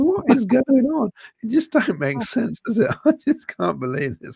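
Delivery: very high voice, words laced with laughter. In disbelief at the league points, laughing while talking. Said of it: "I'm sorry that I'm laughing".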